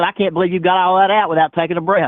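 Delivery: ordinary talk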